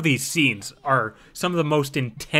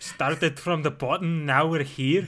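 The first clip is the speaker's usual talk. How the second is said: put-on Scottish-accented delivery; 3 semitones higher than usual. Asked to say a line in a scottish accent: scottish accent. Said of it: "You say it in a Scottish accent".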